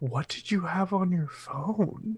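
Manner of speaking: hushed, half-whispered voice. Asking another character quietly about their phone: half-whispering in character.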